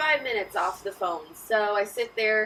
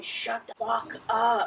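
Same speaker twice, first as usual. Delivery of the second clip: mock, faint, groggy, half-asleep grumbling groan. Retelling a phone call where someone groaned: imitating a groggy groan. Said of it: "He sounded very groggy".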